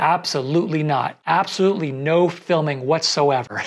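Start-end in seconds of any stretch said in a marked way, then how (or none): none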